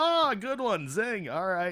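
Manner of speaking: high-pitched, loud, playful teasing tone.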